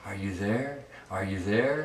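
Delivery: soft, hushed, gentle, disembodied calling voice. Retelling a haunted-basement story, imitating a voice heard in the bathroom. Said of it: "Like in a soft voice".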